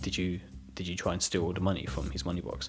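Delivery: mock menacing, calm and quiet. Retelling what the older brother said to the middle brother, imitating a calm, menacing tone. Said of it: "really calm and quiet and, like, very menacing".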